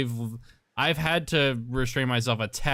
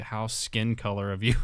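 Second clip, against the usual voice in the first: muttered under the breath, barely above silence; 2 semitones lower, 3 dB quieter than usual. Speaker recalls saying something in a store, retelling a quiet mutter. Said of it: "said it really quietly under my breath".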